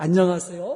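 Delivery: put-on, over-the-top, exaggeratedly polite courteous delivery. Acting out regulars who saw the price tag, put-on exaggerated politeness. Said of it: "뭐 이렇게 아주 과장스럽게".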